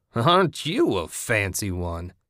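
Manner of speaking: speaking with a cackle. A man who charged out onto the sidewalk answers Ted, cackling. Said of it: "he cackled".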